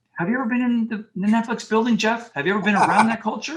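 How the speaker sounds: high, loud, incredulous, challenging tone.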